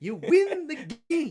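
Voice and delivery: shrill, very loud, high-pitched hollering, belted out. Imitating a co-host saying the line in a Herm Edwards voice. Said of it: "he goes into a Herm Edwards voice".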